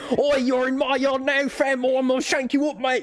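shrill, screamed shriek. Retelling a game scene where Steven fights a dog, Steven screaming British slang. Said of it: "He's just like screaming up random British".

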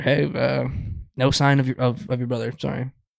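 plain

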